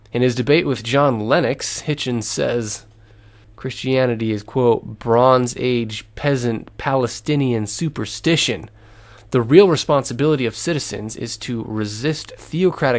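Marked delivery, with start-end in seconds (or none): none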